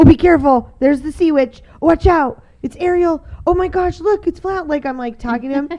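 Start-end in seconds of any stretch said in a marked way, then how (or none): 0.0-4.7 high, over-the-top, acted, overly dramatic theatrical exclamations. Retelling talk to a companion on a Disney ride: imitating own overly dramatic talk. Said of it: "overly dramatic 'cause it's Disney".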